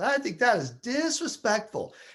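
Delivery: put-on Southern American accent. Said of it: "She's from the South".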